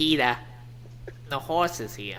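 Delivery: warbly, cartoonish old lady granny voice. Trying out a voice meant for an article, sounding like Lois's mom. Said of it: "You kind of sounded like Lois's mom".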